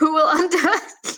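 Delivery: high, slow laughter cutting the words off.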